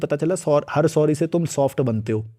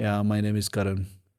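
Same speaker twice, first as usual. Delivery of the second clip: mock timid, submissive, weak voice; 6 semitones lower, 7 dB quieter than usual. Describing people who turn submissive introducing themselves: imitating a timid, submissive introduction. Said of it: "एकदम submissive हो जाते हैं ... heavy आवाज नहीं होती उनकी, ऐसे एकदम".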